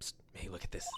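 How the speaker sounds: hushed whisper. Nick calls the other person over to show his proof; whispering. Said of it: "Why are you whispering?".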